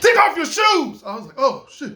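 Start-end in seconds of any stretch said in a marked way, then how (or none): 0.0-1.0 mock, very high, loud barked shout. Recounting how a man got loud at him again, retelling a loud shouted order. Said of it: "he said it like this ... he got really loud at me again".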